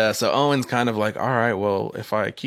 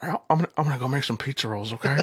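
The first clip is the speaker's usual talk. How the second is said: put-on babyish, whimpering, immature little-kid voice; 3 semitones higher, 3 dB quieter than usual. Imitating a nephew who sounds like the boy in the film: imitating nephew Julian. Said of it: "that's more or less how this kid talks".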